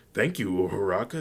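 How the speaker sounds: ordinary delivery, nothing marked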